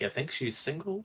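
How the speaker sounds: very quiet, hushed, close half-whisper. Leaning over to another character in the game: half-whispering to another character. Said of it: "lean over and whisper".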